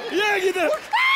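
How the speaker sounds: fake crying wail.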